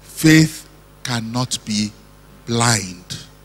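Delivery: very low, quiet, slow voice. Adding a caveat after asking the audience 'Amen?': very low voice. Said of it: "in a very low voice".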